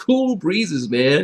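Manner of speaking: best-effort put-on California accent. Describing Pinot Noir grapes from Monterey County, California accent. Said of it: "in my best California accent".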